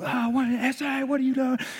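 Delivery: panicked, frantic voices, freaking out.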